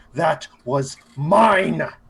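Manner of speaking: loud, furious, snarling growl. Voicing a character who spots a stolen kill: growling in anger. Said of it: "just growls".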